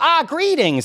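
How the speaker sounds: tiny, very high-pitched gnome voice. Voicing a gnome couple greeting customers in their potion shop: voicing gnome shopkeepers. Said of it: "and they go".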